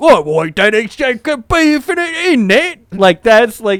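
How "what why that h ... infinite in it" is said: put-on exaggerated British accent, much higher pitch. Discussing how accents get portrayed, the speaker demonstrates an over-the-top British accent. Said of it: "And if you were British".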